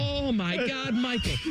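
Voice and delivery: very high, slow, stretched-out cry. Discussing LeBron's titles, the speaker does a Common Man impression about Michael Jordan. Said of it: "You could be Common Man talking about Michael Jordan".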